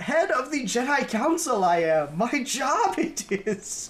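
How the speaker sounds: very slow, high, drawn-out bellowing shout. Retelling a scene where a Jedi master shouts in her ear: imitating Yoda shouting. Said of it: "he just shouts in her ear".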